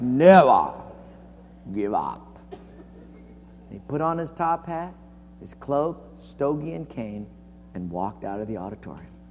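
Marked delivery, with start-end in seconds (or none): 0.0-2.4 low, drawn-out, growled English brogue. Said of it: "he said in his English brogue".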